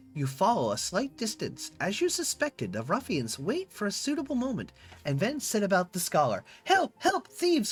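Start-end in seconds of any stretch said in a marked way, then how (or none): 6.6-7.7 thin, reedy voice, much higher pitch. Narrator voicing a scholar set upon by ruffians, in a thin, reedy voice. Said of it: "Cries the scholar in a thin, reedy voice".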